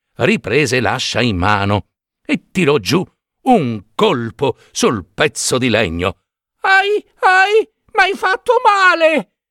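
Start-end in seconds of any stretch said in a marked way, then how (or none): 6.6-9.2 very high, tiny, shrill cry of pain. Narrating a tiny voice from a piece of wood struck by an axe, tiny voice crying out loudly. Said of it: "Gridò forte la solita vocina".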